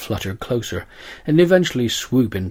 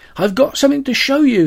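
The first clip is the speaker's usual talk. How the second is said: eager, very high-pitched, excited shout; 7 dB louder than usual. Narrator reading a father running into the house to his son, shouted excitedly. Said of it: "he shouted".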